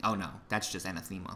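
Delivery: sarcastic, fast, mock-approving tone.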